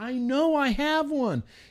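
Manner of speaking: very high, angry yell. Retelling searching for something they couldn't find, imitating themself yelling. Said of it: "I'm like yelling".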